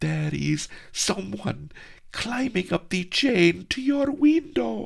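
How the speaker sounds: very high, very loud, shrill, alarmed squeak. Reading a story, a startled character warns another: squeaking. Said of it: "she squeaked".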